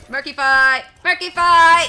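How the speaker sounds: very high, shrill, very loud shout. Speaker plays a game and throws out a fish, shouting. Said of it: "Sorry for shouting".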